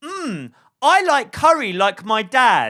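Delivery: put-on loud, very slow, drawn-out, showy performing child voice. Retelling what she said while eating curry, imitating her being really loud. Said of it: "she's being really loud".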